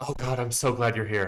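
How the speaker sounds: desperate, pleading, begging cry. Narrator voicing Olive, a woman holding a child, Olive, pleading and desperate. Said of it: "meets your eyes with like pleading and desperation".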